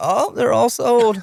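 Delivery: put-on very high, slow little old lady voice. Imagining an old lady behind the counter replying: imitating an old lady clerk. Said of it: "an old lady behind the counter".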